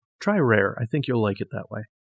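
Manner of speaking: ordinary delivery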